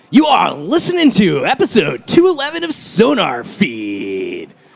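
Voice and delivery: put-on eighties rock radio DJ voice. Showing off the other voices they can do: eighties rock radio voice. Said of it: "eighties rock radio voice".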